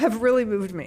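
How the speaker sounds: choked-up, emotional voice. Thanking people for their work and passion, getting emotional. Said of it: "I'm sorry, I'm sh-, getting emotional".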